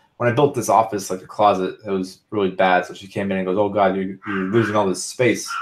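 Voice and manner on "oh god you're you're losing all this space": ordinary delivery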